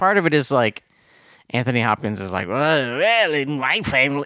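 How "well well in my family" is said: put-on, exaggerated Yiddish accent. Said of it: "he's doing a really bad".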